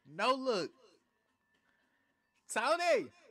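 very loud, very high, thrilled excited shriek. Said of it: "I know I'm screaming a little too much".

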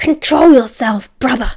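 loud, furious, hissed voice. Narrator reads Gaius rebuking a coughing Jeremy, hissing. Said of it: "Gaius hissed".

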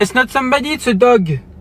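high-pitched, loud, suspicious, accusing voice.

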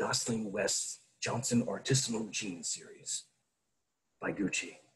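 seductive, sexy announcer voiceover read. Reading an example ad aloud in a sexy voiceover voice. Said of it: "in the sexy voiceover voice I used to do".

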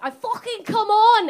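bad put-on Scouse accent. Repeating what a girl in the loo once said, in a bad scouse accent. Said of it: "I'm a Canadian trying to do Scouse".

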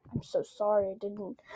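normal talking voice

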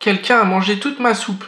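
small, high little bear voice crying out. Narrator reading the little bear's line to the other bears, crying out in a small voice. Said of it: "crie le petit ours de sa petite voix".

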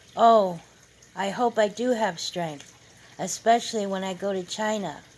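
plain reading voice

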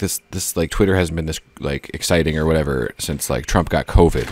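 ordinary talk, nothing marked

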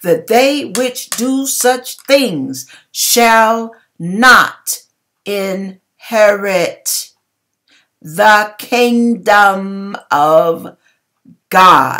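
slow, measured, deliberate, word-by-word delivery. Reading scripture aloud to listeners, slow and deliberate. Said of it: "I said that slowly and deliberately".

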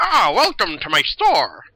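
small gnome voice, loud and swooping. Game master voices a small gnome welcoming players into his store, in a gnome voice. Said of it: "and you suddenly see a small gnome pop up".

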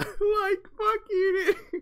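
very high, loud, stretched-out cartoon voice. Repeating a line from the video he just watched: Shaggy voice. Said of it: "Whoever did the Shaggy voice".

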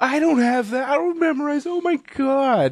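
mock, high-pitched, whiny, frustrated voice. Retelling a customer's answer about her bank details, imitating a woman whining. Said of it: "she was whining".

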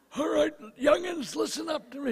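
put-on creaky old man voice. Joking about a raspy throat, doing a put-on old man voice. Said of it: "it's just old man voice".

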